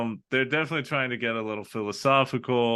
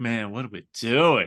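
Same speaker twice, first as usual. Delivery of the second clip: mock stoned, inward-turned musing. Imitating people who get inward after drinking or drugs: imitating inward musing. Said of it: "a lot of people get, like, real inward".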